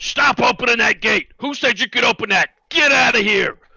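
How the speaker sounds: very high, shrill, very loud bellowing yell. Playing a character ordering workers to stop opening the gate: yelling in character. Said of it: "start yelling".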